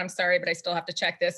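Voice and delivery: mock-flat delivery. Retelling what an official said while apologising and still doing his duty, imitating a monotone voice. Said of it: "just monotone".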